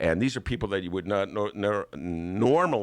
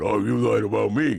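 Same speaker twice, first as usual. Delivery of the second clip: loud, rough, rasping politician voice, raised; 5 dB louder than usual. Retelling a quarrel after a debate: Bernie Sanders impression. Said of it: "That's my Bernie".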